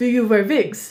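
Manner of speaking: put-on very nice, convincing German accent. Retelling a prank interview where a co-star posed as the interviewer, in a very nice German accent. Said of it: "in a very nice German accent".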